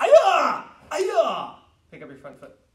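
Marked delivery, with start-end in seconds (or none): 0.0-1.5 loud, high, martial arts kiai shout.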